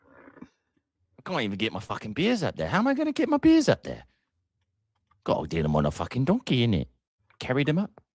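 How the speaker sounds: put-on London Cockney accent, high and swooping. Speaker trying a cockney accent after a weak british one: cockney accent. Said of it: "I could do a Cockney one".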